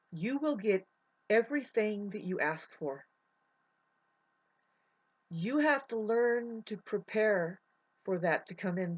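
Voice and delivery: about to cry, voice near tears. Speaking to listeners about praying, about to cry. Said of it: "I'm about to cry right now".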